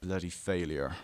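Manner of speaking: gritty, dead-serious, disparaging tone. Retelling what he said to the speaker before walking out: imitating a gritty, serious voice. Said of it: "he has this really, like, gritty, serious voice".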